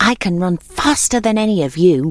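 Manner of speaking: plain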